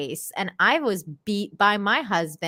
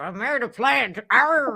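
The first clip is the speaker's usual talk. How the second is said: mock pirate voice, higher pitched; 3 semitones higher than usual. Imitating a woman in a clip as a pirate: imitating someone as a pirate. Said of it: "she looks like a pirate".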